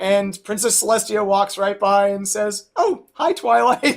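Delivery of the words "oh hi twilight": put-on nonchalant casual voice, higher. Retelling a scene where Princess Celestia walks by: nonchalant Celestia voice. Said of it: "totally nonchalant and just like".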